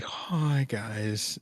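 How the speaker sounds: barely audible, very quiet, downcast, depressed-sounding delivery. Describing a maudlin way people greet viewers on video, imitating a depressed greeting. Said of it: "Almost like depressed".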